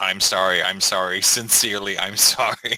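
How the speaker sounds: slow, groveling, over-apologetic tone, apologizing repeatedly. Imitating another speaker's imagined ban letters: imitating an over-apologetic letter. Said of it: "your ban letters that's just full of this".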